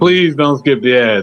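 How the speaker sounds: sweet, courteous, polite tone. Asking listeners not to skip the ads: saying it nicely. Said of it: "I'll say it nicely".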